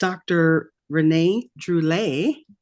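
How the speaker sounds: put-on French accent, word pronounced the French way. Introducing a guest by name: put-on french accent. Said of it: "My French accent".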